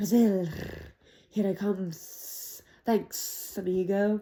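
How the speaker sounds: drawn-out, low hissing snake voice, very slow. Narrating a story, reading an escaping snake's words in a low, hissing voice. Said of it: "a low, hissing voice said".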